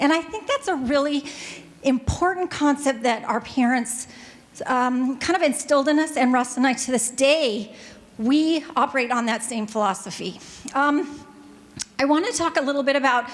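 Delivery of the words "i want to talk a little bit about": talking very fast, rattled off. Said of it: "I know I'm talking so fast".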